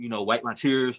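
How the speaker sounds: plain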